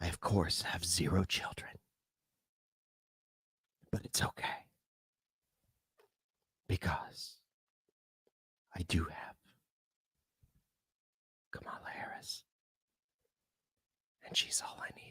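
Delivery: radio announcer voice. Performer on air, announcing to everybody, in a mock NPR voice. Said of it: "I got to put my N P R voice on".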